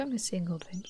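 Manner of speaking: soft, quiet whisper.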